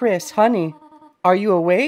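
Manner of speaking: high, full goat voice. Player voice-acting the game's dialogue, Toriel calling to Chris: Toriel voice. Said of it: "I'm gonna be fully voice acting this game".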